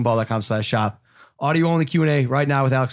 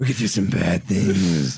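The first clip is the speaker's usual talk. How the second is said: deep, low, devilish demon voice; 4 semitones lower than usual. Talking with a friend, showing what he'd say in a Hormone Monster voice. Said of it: "I'll sound like the hormone monster".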